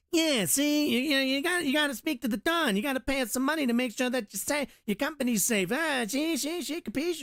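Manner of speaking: very high, squeaky, small-time wiseguy voice. Voicing the little mob guy demanding money: little mob guy voice. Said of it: "the little mob guy who's all like".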